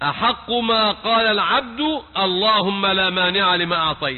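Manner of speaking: ordinary talk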